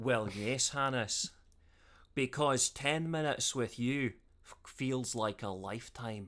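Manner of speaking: put-on, seductive, sexy Scottish accent. Trying to seduce a friend as a joke: put-on sexy Scottish accent. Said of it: "I'm gonna do it in the sexiest accent possible".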